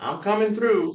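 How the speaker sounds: mock shrill, very high, loud announcing yell. Retelling being rolled down a hospital hall on a bed: retelling his own yell. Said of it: "I'm yelling".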